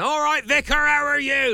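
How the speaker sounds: put-on aggressive tone. Retelling a complaint from vicars, imitating someone greeting a vicar really aggressively. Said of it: "Like really aggressive like that".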